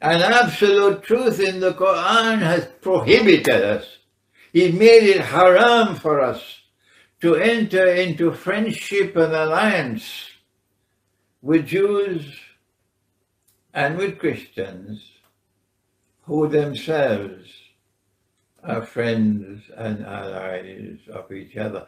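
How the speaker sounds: very slow, deliberate, drawn out word by word. Addressing listeners who dislike the pace, speaking very slowly. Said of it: "when I speak so slowly".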